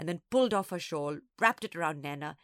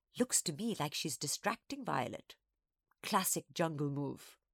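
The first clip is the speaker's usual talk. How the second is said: plain reading voice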